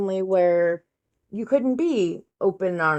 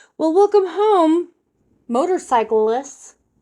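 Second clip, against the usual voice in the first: very high, loud, sarcastic fake cheerful voice; 10 semitones higher, 5 dB louder than usual. Retelling a story, the speaker quotes someone's line in a fake cheerful voice. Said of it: "in his fake ass cheerful voice goes".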